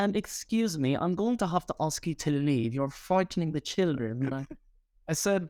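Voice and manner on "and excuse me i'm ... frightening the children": woman's voice, strained, put-on British accent. Retelling a woman at the park asking them to leave, imitating a fake British accent. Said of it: "She's trying to sound British".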